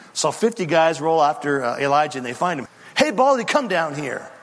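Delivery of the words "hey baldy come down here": jeering, scornful, mocking taunting tone. Retelling a story, acting out the soldiers' mocking call to a man of god. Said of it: "they say it in a kind of a mocking fashion".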